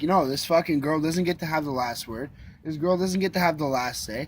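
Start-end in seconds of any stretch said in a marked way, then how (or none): none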